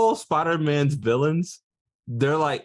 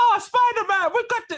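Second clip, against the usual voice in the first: very high, badly faked Jamaican accent. Mocking a nineties show's Jamaican taxi driver helping Spider-Man, imitating a bad Jamaican accent. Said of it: "have her do a Jamaican accent".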